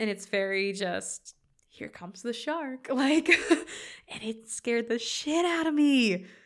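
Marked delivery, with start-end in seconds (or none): 1.8-2.9 mock dry, matter-of-fact, very deadpan delivery. Imitating how a movie's shots present the shark: imitating a deadpan delivery. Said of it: "very deadpan".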